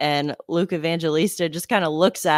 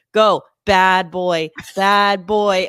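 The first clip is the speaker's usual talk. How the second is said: very slow, loud, drawn-out teasing taunt; 2 semitones higher, 6 dB louder than usual. Retelling how a player taunted an opponent after a penalty: Luke Evangelista taunting. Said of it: "and he goes".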